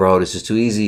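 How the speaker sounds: ordinary talk, nothing marked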